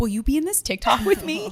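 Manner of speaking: put-on anxious, flustered, high, panicked delivery. Retelling to Liz what she said to you, mock-panicked. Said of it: "you looked really like panicked".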